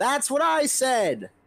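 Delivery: very high, far-carrying yell, as if from afar. Voicing Godhammer yelling down the tunnel: Godhammer yelling. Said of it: "Godhammer yells down the tunnel".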